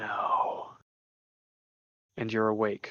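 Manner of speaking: dry, raspy mummy-like hiss from the throat. Reading a story aloud, voicing a character in a raspy, mummy-like hiss. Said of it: "the raspy, almost mummy-like voice hisses from his throat".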